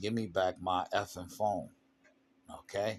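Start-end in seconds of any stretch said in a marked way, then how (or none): none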